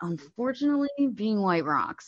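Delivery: humble, modest, rueful, without boasting. Showing how to say it without sounding like bragging: not braggy. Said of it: "you can't say it in like a braggy way".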